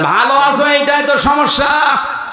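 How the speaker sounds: exclaiming devil voice.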